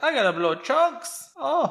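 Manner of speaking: very high, shrill, loud put-on cartoon voice. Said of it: "I just think of Miriam from Curse the Cowardly Dog".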